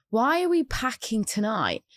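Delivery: plain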